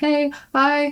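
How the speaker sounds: very high, shaking, jittery, nervous voice. Retelling greeting the man with the clipboard on his first time, acting out nervous past self. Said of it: "I'm sweating. I still I'm nervous. I'm jittery. I'm shaking".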